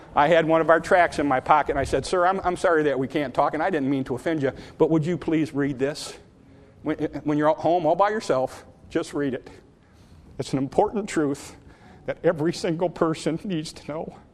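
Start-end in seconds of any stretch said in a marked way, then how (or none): 2.1-14.2 put-on trembling, quavering, quivering voice. Retelling what they said to a man while handing him a tract, quivering voice. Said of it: "I said it with a quiver in my voice like that".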